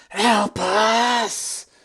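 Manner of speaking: screeching specter voice. Voicing a specter rising from a corpse and crying out: ghostly screech. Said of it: "she screeches".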